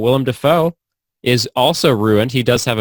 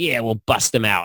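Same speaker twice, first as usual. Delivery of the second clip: weird, put-on Southern accent; 4 dB quieter than usual. Retelling a movie scene where the characters sit in jail: weird southern accent. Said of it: "he says it for some reason in a weird Southern accent".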